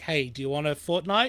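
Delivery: ordinary talk, nothing marked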